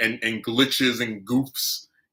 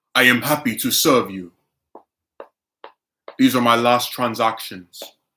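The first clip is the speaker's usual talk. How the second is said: loud fake put-on Russian accent; 5 dB louder than usual. Joking while assisting a final customer: put-on Russian accent. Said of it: "Speaking of Russian accent".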